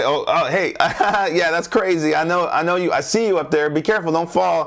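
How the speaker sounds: high, laughing, playful call.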